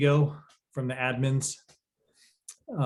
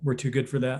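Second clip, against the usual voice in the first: normal talking voice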